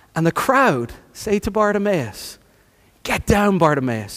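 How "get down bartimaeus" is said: plain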